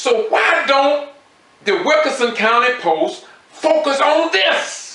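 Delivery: high, slowed, emotional outburst. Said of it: "excuse me for getting emotional".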